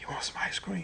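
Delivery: hushed, breathy whisper under the breath. Retelling how he called his child who ignored him, retelling a whisper. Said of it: "And then I whispered".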